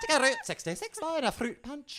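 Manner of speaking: loud, high-pitched Scottish woman's accent.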